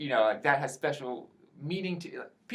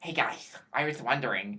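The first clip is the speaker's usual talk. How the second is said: cliché nerdy geek voice; 3 semitones lower than usual. A speaker retells doing an impression for coworkers, Robot Chicken geek voice. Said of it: "I did the generic geek".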